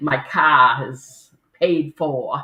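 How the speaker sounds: put-on New England accent. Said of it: "I heard that accent in car".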